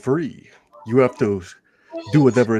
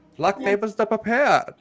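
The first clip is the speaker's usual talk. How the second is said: put-on higher, villainous, evil German scientist accent; 9 semitones higher than usual. Reading a quote aloud for players to guess: evil German scientist voice. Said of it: "Why do you sound like an evil German scientist right now?".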